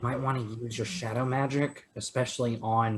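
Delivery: very quiet, hushed half-whisper. Half-whispering advice in character to another party member: half-whispering in character. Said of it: "I'm going to whisper to Gita".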